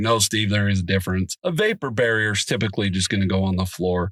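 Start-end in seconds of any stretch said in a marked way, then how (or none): none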